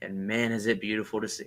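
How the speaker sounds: ordinary delivery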